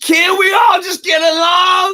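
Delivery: very high, loud impassioned shouted cry. Show how he said it before, in contrast to how weak he says it now, imitating someone crying for people. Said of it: "He before he was like crying for people".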